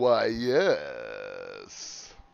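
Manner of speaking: very low, creaky, swooping, drawn-out "yes". Attempting a deeper voice for an impression: George Takei voice. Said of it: "I can't do a good Geor-".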